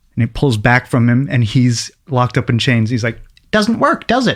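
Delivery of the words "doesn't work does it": very high, squeaky put-on cartoon character voice. Acting out a scene of a chained villain: cartoon voice. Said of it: "both of these gentlemen are very good at cartoon voices".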